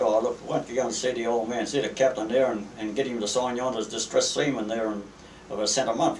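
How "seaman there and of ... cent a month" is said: normal talking voice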